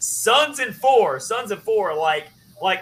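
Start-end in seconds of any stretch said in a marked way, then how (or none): 0.0-1.9 put-on yelling, pitched higher. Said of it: "the guy yells".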